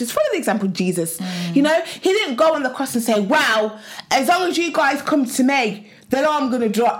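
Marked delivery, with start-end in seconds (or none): 3.2-7.0 emphatic, mildly shouty outburst. Speaker acts out what Jesus did not say on the cross, retelling a shouted quote. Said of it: "why are you even shouting?".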